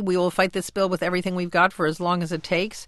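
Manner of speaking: ordinary delivery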